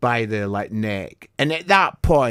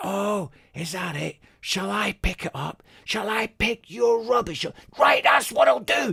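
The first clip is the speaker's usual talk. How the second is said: mock furious outburst, boiling over, pitch climbing; 4 dB louder than usual. Retelling the moment they snapped at people over dropped rubbish; retelling snapping in anger. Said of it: "then that snapped inside me".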